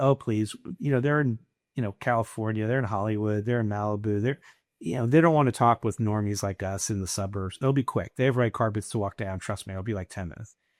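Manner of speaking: ordinary talk, nothing marked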